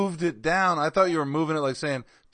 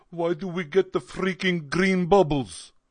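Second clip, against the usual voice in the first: put-on Russian accent; 2 semitones higher than usual. Retelling what someone said yesterday, in a Russian accent. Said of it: "he talked in a Russian accent like".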